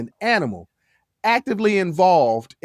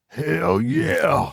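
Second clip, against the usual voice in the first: rough, raspy, creaky wrestler voice; 2 semitones higher than usual. Answering own question in a put-on wrestler voice: Stone Cold Steve Austin voice. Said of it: "in a Stone Cold Steve Austin voice".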